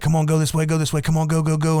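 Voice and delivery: mock urgent, high-pitched screaming. Retelling getting through a rising river, urging the others on, retelling screaming urgently. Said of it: "and I'm screaming".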